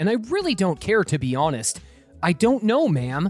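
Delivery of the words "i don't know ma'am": ordinary talk, nothing marked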